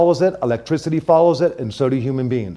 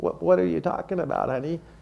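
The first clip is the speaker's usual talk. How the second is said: imitated very old woman voice, quieter; 2 semitones higher, 10 dB quieter than usual. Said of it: "I'm good with voices".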